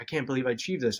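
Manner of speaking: ordinary talk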